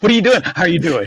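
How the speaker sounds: put-on high, overeager thirteen-year-old voice. Repeating own greeting to mock it: imitating own eager teen greeting. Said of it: "Why did I sound like a fucking thirteen-year-old".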